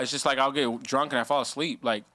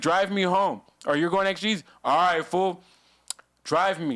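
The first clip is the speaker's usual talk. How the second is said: barked, held-in, contained voice; 4 semitones higher than usual. Retelling how Eddie demanded a ride home: imitating Eddie yelling. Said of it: "He yells at everybody".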